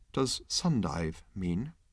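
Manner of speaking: small, hushed, quiet voice. Trillian asks Marvin a question as the ship's noise stops: small, quiet voice. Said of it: "said Trillian in a small, quiet voice".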